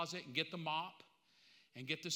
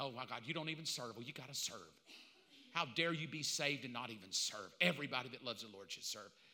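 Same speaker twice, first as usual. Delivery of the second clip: low, guilt-tripping, scolding preacher-style voice. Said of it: "preachers can guilt trip you".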